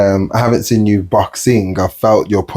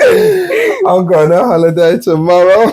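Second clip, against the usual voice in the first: bright, delighted gush, very high and swooping; 10 semitones higher, 4 dB louder than usual. In a game of acting out prompted emotions, the speaker plays it happy.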